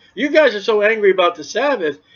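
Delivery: ordinary delivery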